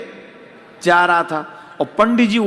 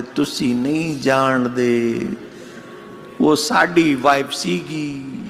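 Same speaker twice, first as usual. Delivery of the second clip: weepy, low, slow voice, close to crying; 6 semitones lower, 4 dB quieter than usual. Retelling what the pandit said, imitating a tearful voice. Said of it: "पंडित जी रोआसी आवाज में बोले".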